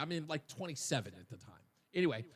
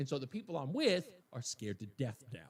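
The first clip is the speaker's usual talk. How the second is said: ordinary talk, nothing marked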